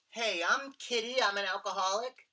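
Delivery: very high, loud, squeaky little voice. Retelling how a woman introduced herself, squeaky voice imitating Kitty. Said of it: "squeaky voice".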